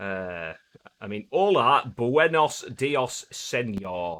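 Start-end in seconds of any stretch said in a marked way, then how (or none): 1.3-4.2 slow, broad Yorkshire accent. Greeting a viewer in Spanish the way a Yorkshireman would: Yorkshire accent. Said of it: "from Yorkshire should say it".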